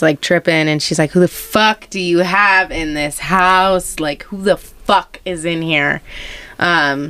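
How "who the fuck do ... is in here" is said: plain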